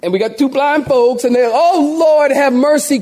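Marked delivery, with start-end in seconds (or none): 1.5-3.0 acted, drawn-out, slow, high pleading cry. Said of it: "crying out to God for help".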